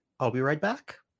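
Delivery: questioning upward rise in pitch on back. Reading out a quoted line, with rising pitch on back. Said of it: "Raising intonation. Didn't mean for that to be a question".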